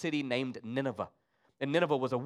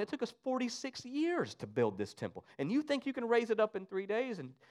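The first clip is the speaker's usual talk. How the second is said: scornful, laughing, pitched-up jeering mockery; 8 semitones higher, 5 dB quieter than usual. Retelling a scripture story, the speaker voices the crowd mocking a man, imitating a mocking crowd. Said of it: "And they start mocking him".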